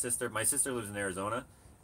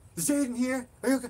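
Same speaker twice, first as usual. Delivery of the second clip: put-on angry man voice, higher pitch; 13 semitones higher, 4 dB louder than usual. Retelling a man in clothes calling kids out of the pool: imitating an angry man. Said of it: "He was really mad".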